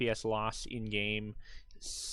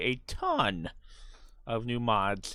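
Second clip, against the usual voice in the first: very drawn out, put-on voice crack on mods; 4 dB louder than usual. Announcing a ton of new mods for the playthrough: put-on voice crack. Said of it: "make my voice crack every time I say".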